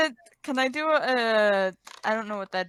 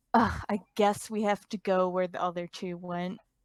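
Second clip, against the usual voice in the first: fed-up, exasperated sigh through the words; 3 semitones lower, 4 dB quieter than usual. Annalisa finds only worthless junk and speaks with an exasperated sigh. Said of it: "lets out a sigh of exasperation".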